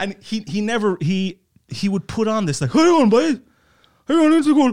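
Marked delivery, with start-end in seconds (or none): 2.7-4.7 very high, very loud, shrill, rattled-off wacky madman voice. Retelling how the man in charge of the school talked, in an abnormal put-on voice. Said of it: "he wouldn't speak like a normal person".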